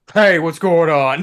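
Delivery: loud voice of a big, heavy-set man. Imagining how a character greets the table: big fat man voice. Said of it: "this big fat man".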